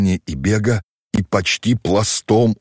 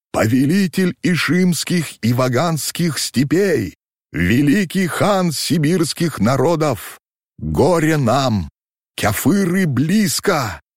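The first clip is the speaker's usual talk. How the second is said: trembling, high-pitched crying voice; 7 semitones higher than usual. A man brings warning to the khan, crying out in a trembling voice. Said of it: "вскричал дрожащим голосом".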